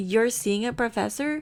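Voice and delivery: ordinary talk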